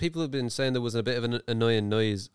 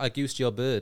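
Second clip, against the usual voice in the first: usual speaking voice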